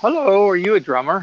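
very, very cute, high little voice. Retelling a lady's question on a dark concert balcony, imitating a cute voice. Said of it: "very, very cute voice and everything".

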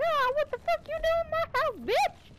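squeaky, loud, very aggressive, mean voice. Acting out two men waking to find an intruder: mock-aggressive Mickey Mouse voice. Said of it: "I made it sound very aggressive".

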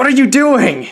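anguished, tormented, pained, high-pitched voice. Retaking the line after being told to try it more anguished. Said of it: "Try like more anguished".

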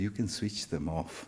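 very quiet, hushed, sheepish, embarrassed voice. Retelling a child's shy answer to a question: imitating a very embarrassed voice. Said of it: "in a very embarrassed voice".

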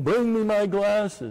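high, loud, screamed delivery. Act out a faith healer on stage calling to his daughter who can't hear, imitating his screaming. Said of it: "He starts screaming".

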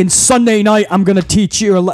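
plain

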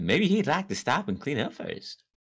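woman's voice.

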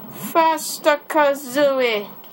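put-on high-pitched British accent. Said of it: "Why am I talking my British accent?".

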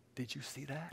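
really soft, very quiet, hushed voice. Retelling what a younger brother asked in the bunk beds: imitating a really soft voice. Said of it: "in a really soft voice".

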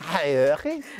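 high-pitched put-on regional Dutch accent.

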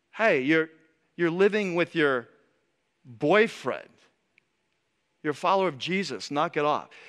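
ordinary delivery

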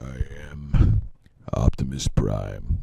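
very low, hushed, soft tough-guy voice. Wishing you could do Peter Cullen, try the line in an Optimus Prime voice like Sylvester Stallone. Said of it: "Now it sounds like Sylvester Stallone".

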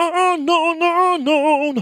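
very high, loud, belted "no, no" ad-lib. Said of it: "아, 이 톤 알잖아요".

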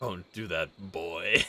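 deep growling warrior voice. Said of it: "sounded so like Kratos".

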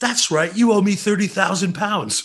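put-on English-accented voice. Act out Richard recognizing the bass player at a restaurant and asking for money, in an English voice. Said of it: "this English voice going".

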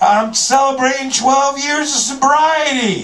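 very high, loud, hollered proud yell. Speaker retelling what a man yelled out to him: retelling a loud yell. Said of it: "he just yells out, he was very loud".

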